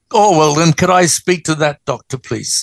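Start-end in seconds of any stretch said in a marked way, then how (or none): none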